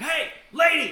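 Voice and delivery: high, loud, mock shouting voice. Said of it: "You should've been like".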